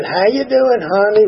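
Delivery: put-on sweet, drawling, genuine Southern accent. Retelling how an older sponsor used to greet the speaker, in a real southern drawl. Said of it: "Real southern drawl and all that".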